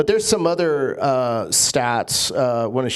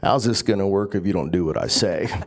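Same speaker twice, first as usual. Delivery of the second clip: put-on low Western cowboy accent; 5 semitones lower than usual. Retelling a movie scene where he turns to his woman: Kevin Costner cowboy accent. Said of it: "in his cowboy accent".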